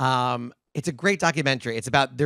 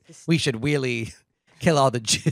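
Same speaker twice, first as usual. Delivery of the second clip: exaggerated, cartoonish, thick lisp. Joking that a lisp changes the tone of anything: Elmer Fudd lisp. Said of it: "but with a lisp, I mean, like, ... an Elmer Fudd version of that".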